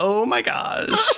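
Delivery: very high-pitched, grating, nasal, annoying voice. Imitating Nika from an old episode, in a nasal, annoying Nika voice. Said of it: "Make it really nasally and annoying".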